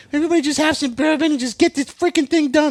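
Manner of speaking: put-on very high, loud, frantic, exasperated outburst. Retelling how a mother settled a fight over trees: imitating someone freaking out. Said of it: "she was freaking out".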